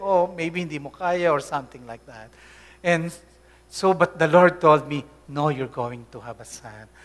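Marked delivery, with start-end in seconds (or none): 0.0-1.3 teasing, sarcastic little jab. Retelling what the father would say about not having a child: imitating father's sarcastic remark. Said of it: "in his own brand of, uh, sarcasm, my father would say".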